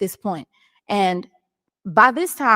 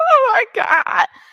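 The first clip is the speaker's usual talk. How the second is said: put-on very high sobbing, crying exclamation; 3 dB louder than usual. Retelling the moment a church door opened: imitating crying. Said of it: "Now I'm just buku cry".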